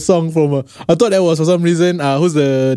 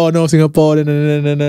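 ordinary delivery

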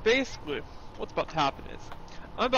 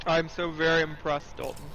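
ordinary talk

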